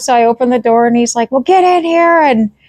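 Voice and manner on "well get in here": put-on, really angry, pitched-up yelling. Retelling what a man yelled at her as she opened the door, imitating angry yelling. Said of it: "as the whole time he's like yelling at me".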